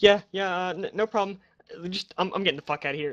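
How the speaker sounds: shaky, quavering voice. Running the game, the speaker voices someone answering the players after a maglock disengages, shaky voice. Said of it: "a shaky voice come back like".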